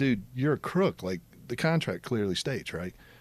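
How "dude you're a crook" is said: mock-angry cussing, telling off. Recalling confronting a man over a contract, retelling cussing him out. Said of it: "heard me cuss out this guy".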